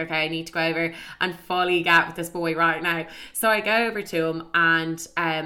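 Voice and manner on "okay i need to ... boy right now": normal talking voice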